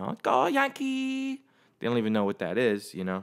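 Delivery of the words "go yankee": fake, bad Chinese accent, very high-pitched. Describing fans in china wearing yankee gear, the speaker quotes them; bad chinese accent. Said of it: "That was my attempt at a Chinese accent".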